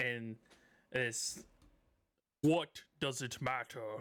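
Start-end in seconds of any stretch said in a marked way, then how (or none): 2.4-3.8 many creature voices speaking together in unison, chorus. Voicing all the cockatrices speaking to the listeners in unison: booming cockatrice chorus voice. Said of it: "you hear this booming voice as all of the chickens".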